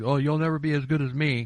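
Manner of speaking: ordinary talk, nothing marked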